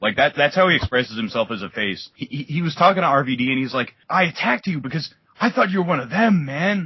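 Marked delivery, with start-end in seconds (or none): 4.1-6.9 put-on surfer-dude voice, pitched higher. Retelling a wrestler's backstage promo: Sting surfer voice. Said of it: "almost trying to make him sound like a, a kinda, that, that kinda surfer".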